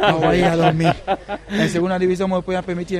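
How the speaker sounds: talking while laughing through the words.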